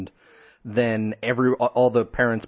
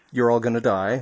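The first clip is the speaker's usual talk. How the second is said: ordinary talk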